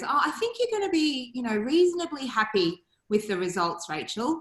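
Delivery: ordinary delivery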